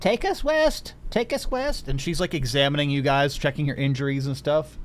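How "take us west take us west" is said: put-on very high, slow little-old-lady voice, calling out. Describing the scene to the group, voice a little old lady yelling at the crew: little old lady yelling. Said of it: "the little old lady yells at the crew".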